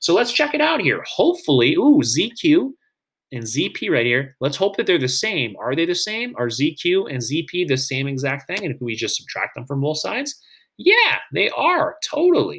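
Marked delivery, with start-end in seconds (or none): 10.8-12.6 voice cracking with excitement. Confirming two segments match in a proof: voice cracking with excitement. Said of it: "My voice cracks when I get super excited".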